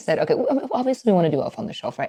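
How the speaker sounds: hushed, secretive whisper. Telling listeners about a holiday mishap, whispering. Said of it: "I don't know why I'm whispering like it's a secret".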